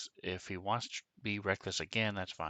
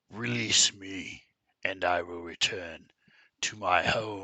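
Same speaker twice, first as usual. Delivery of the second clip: very loud, throaty, guttural inhuman creature voice; 9 dB louder than usual. Narrating a scene, the speaker voices the thing pleading for release, in a guttural voice. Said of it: "this guttural voice come from it".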